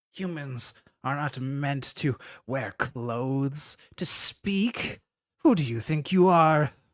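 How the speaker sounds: haughty, disdainful voice crackling over intercom speakers. The ship's voice addresses the humans aboard its ship, in a crackling ship-wide voice. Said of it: "What are you doing on my ship, / Despicable. / It's crackling over the whole ship".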